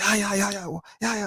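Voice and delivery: acted very high, shrill hollering yell.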